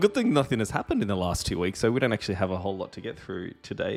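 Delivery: plainly sarcastic delivery with swooping pitch. Opening a discussion with co-hosts after a break: sarcastic tone. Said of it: "the sarcasm hopefully is evident in my voice".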